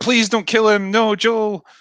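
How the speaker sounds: acted shrill, very high, drawn-out screaming. Retelling how she reacted in that scene: imitating someone screaming.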